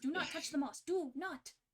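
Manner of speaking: strained, urgent whisper-yell, half panicked. Retelling what someone kept warning the group, retelling a whisper-yell. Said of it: "She's whisper yelling".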